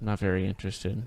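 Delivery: low, soft, flat, uninterested monotone.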